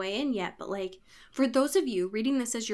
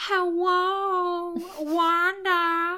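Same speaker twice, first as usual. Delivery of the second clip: put-on cartoon kid voice, higher and louder; 8 semitones higher, 5 dB louder than usual. Retelling a character calling out from a book: Carl voice. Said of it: "he's like Carl".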